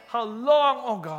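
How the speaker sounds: acted heartfelt pleading cry. Talking about Psalm 13, acting out the psalmist's words: acting out a heartfelt cry. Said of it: "expressing his true heartfelt emotions from his gut".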